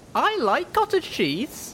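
tiny, very high, slow little voice. Reading a story aloud, the first-person narrator speaks in a very small voice. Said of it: "I said in a very small voice".

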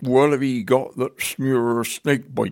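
put-on West Country accent. Recalling a strange call while working as a chemicals telephone advisor, West Country accent. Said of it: "West Country accents were fairly difficult".

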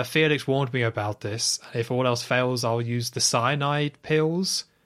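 ordinary talk

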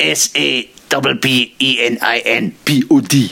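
bad put-on French accent. Mimicking Amandine doing an impression of the speaker: Amandine impression, bad French accent. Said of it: "here's me doing my impression of Amandine doing an impression of me".

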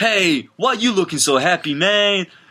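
high put-on New York accent. A nature wizard named Terry speaks to a man, in Terry's New York accent. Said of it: "one of the prime metropolises".

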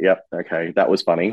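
usual speaking voice

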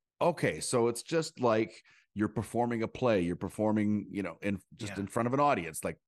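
ordinary delivery

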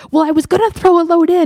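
defensive, shrill. Retelling what you say on seeing your husband carry laundry down, mock-defensive retelling. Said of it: "I get a little defensive about it".

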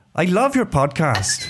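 attempted Welsh accent. Playing an accent-guessing game on a podcast, attempted welsh accent. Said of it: "I need to practice a Welsh accent".

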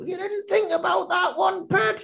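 put-on high, scratchy voice with northern accent. Retelling how the detective catches a culprit: scratchy northern Vera voice. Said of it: "she kind of talks like this, and she's got a scratchy voice".

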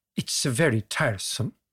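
rough, amateurish put-on Swedish accent. Retelling what an airline receptionist said: imitating a Swedish accent. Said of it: "You need to work on that accent".

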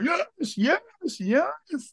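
very high, insane, frenzied screaming. A commentator recalls his reaction when the ball went in: retelling his own scream. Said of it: "just screaming like".

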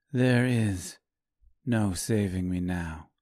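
said softly. Reading a story, a woman answers the man who loves her, softly. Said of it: "she said softly".

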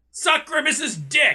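forceful and hostile. Signing off the show to the listeners until next week, aggressive. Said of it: "You said that really aggressively".

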